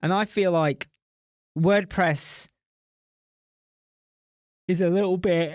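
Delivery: halting speech broken up by a yawn. Explaining in a conversation why wordpress suits clients: yawning while speaking. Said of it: "Sorry, I'm yawning".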